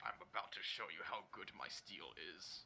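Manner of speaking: whispered, menacing, boastful orc chieftain voice. Voicing an orc chieftain taunting the party: voicing orc chieftain Gorak. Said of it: "This guy is Gorak".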